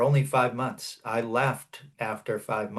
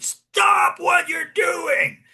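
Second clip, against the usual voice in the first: very high, loud, urgent shout; 8 dB louder than usual. Speaker recounts moving across a roof at a man, retelling own yell.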